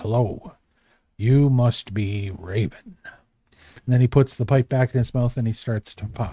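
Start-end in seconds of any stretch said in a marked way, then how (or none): 0.0-3.0 deep, very low, very solemn voice. A gnome greets the player walking in, in a very low solemn voice. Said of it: "in this very low voice, very solemnly says".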